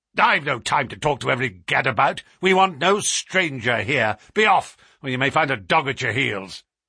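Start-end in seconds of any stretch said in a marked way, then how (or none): none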